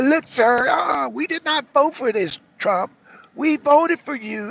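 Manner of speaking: sassy put-on Georgia accent. Speaker imagines Marjorie Taylor Greene telling Trump off: Marjorie Taylor Greene Georgia accent. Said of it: "I can hear her Georgia accent now".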